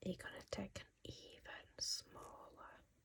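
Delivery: very quiet, soft, hushed whisper. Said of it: "I don't know why I'm whispering".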